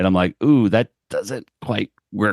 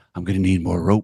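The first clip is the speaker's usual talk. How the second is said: put-on gruff actor voice. Quoting a cartoon character's line: Jack Palance voice. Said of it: "It's the same Jack Pal-".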